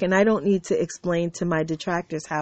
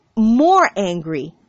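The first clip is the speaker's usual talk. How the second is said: "more angry" stressed, angry, louder and slow.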